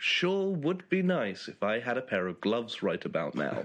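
ordinary talk, nothing marked

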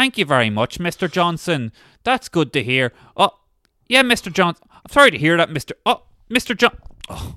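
put-on male voice with Northern Irish accent. Retelling a training video of a Northern Irish man on a call: imitating a Northern Irish guy. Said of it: "there's a video of him going like".

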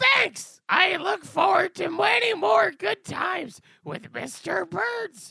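put-on cartoon-style character voice. Thanking another speaker for congratulations: Marge Simpson voice. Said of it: "it's Marge Simpson".

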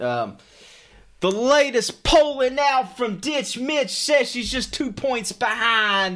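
very high voice with salesy pitch cadence. Imagining how a man would pitch the McGrath campaign, imitating his campaign-pitch style. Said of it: "This is me bringing that style".

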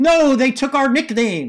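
high, loud, dismayed mock outcry. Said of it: "we're like".

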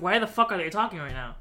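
acted-out annoyed tone. Recalling watching a scene where characters kept talking, retelling own annoyance. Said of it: "I was annoyed".

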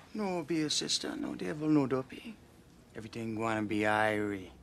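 put-on strong, heavy Jamaican accent. Reassuring someone who begs help for their feverish mother, in a thick jamaican accent. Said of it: "starts talking in like this thick Jamaican accent".

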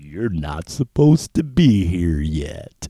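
put-on adorable voice. Retelling the moment God finally speaks to the speaker: God's adorable voice. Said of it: "he says in this adorable. Voice".

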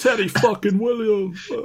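high put-on New Yorker voice.

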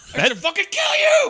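put-on, very loud, high-pitched movie-style yelling. Quoting a line from a movie about a psychopathic cop: Al Pacino-like yell. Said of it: "That sounds like Pacino".

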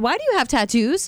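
mock-furious, livid tone. Retelling the reply to a condescending coworker, retelling a livid retort. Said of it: "I was livid".

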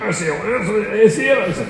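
put-on Glaswegian accent.

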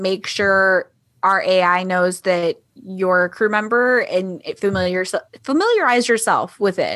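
normal talking voice

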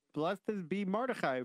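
plain

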